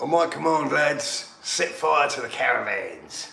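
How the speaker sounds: put-on Australian accent. During match commentary, giving an order to the lads in an Australian accent. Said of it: "I got an Australian accent on that".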